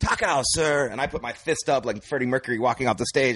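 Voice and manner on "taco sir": high, called-out line in broken English. Retelling how a man called out across a restaurant: imitating a yell. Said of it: "he yells".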